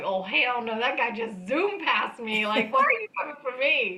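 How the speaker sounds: indignant, pissed-off rant with rising pitch. Retelling being pulled over after a faster car passed: retelling being pissed off. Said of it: "Now I'm pissed".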